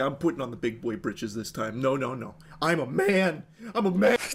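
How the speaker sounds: mocking tough-guy voice. Mocking a man who spends emergency savings on game characters, mock macho bluster. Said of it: "He's like".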